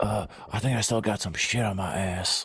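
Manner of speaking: groggy, just-woke-up voice. Imitating Joe Biden getting up from the toilet: Joe Biden impression. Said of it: "he's always just, like, just waking up".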